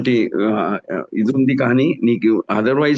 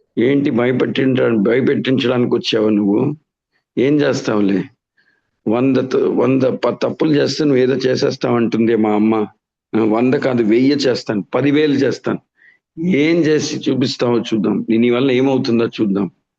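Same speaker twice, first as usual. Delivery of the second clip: ordinary talk, nothing marked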